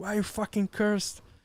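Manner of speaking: high, yelling, shouted outburst. Retelling talking back while editing a video: imitating own yelling. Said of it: "yelling at him back".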